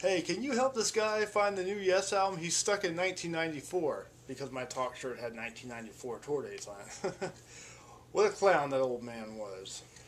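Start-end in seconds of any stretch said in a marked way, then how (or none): 0.0-4.1 high-pitched, loud yelling. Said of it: "he yells to one of his employees".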